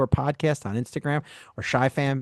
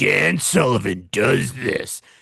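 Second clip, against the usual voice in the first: mean, angry voice, dragged out very slow; 4 dB louder than usual. Imitating political campaign ads about an opponent: imitating a mean, angry campaign voice. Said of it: "in the mean, angry voice".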